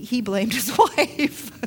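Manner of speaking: amused, laughing through the words. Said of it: "I'm laughing because it".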